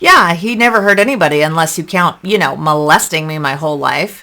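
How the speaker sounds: dripping with very heavy sarcasm. Retelling a reply to their mother during an argument, re-enacting a sarcastic reply. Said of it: "I very sarcastically replied".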